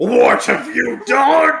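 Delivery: very high, very loud, slow villain shout. Acting out the villain's reaction to defeat: Shredder voice. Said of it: "Shredder be like".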